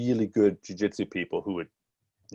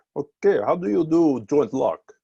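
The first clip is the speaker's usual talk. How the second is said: loud, high-pitched put-on Russian accent; 7 semitones higher, 6 dB louder than usual. Retelling a podcast guest's analogy for a joint lock, in a put-on Russian accent. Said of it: "I'm going to stop with the Russian accent now".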